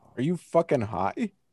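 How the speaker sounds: soft voice breaking partway through. Debating a playoff series prediction, voice cracking. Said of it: "Is that a voice crack".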